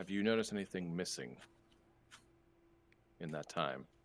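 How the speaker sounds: very quiet, murmured under the breath. The speaker acts out asking her a question under the breath, very quietly. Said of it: "like very quietly".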